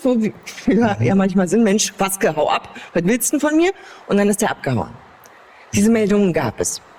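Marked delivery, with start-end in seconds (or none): 1.6-3.7 acted Berlin dialect outburst, pitch climbing. Speaker quotes a woman yelling at a man who shone a flashlight in her face; retelling a yell in Berlin dialect. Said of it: "Da habe ich den angebrüllt, ne, auf Berlinerisch".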